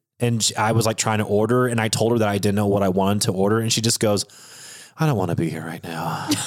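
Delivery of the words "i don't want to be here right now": put-on deadpan voice, dead straight and low. Retelling what a defeated drive-thru girl said to them, imitating a deadpan drive-thru worker. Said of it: "said that so deadpan".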